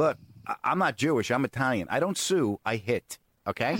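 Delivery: normal talking voice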